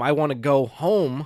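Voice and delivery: ordinary talk, nothing marked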